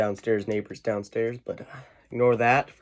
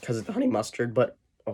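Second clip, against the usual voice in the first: voice cracking, quieter and faster; 3 dB quieter than usual. Speaker eating on camera and talking to viewers, voice cracking. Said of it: "sorry for that voice crack".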